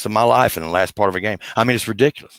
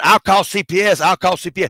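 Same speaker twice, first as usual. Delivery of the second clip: put-on high little kid's holler; 9 semitones higher than usual. Comparing a dog's whining to a child, imitating a child hollering. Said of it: "reminds me of a child hollering".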